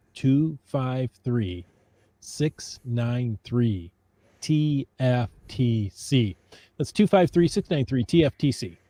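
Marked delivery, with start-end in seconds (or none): 0.2-6.4 very slow, deliberate, each digit drawn out. Reading out the call-in number to listeners so they can get it, speaking slowly. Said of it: "I'll say this slowly so you can get it".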